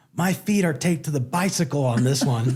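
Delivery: restrained, held-back, mildly comic yell. Retelling a line from a movie where the character yells: imitating Will Ferrell yelling. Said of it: "he yells".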